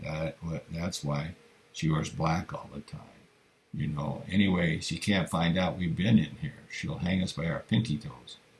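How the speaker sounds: plain reading voice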